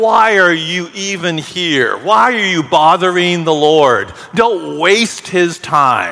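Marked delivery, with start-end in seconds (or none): none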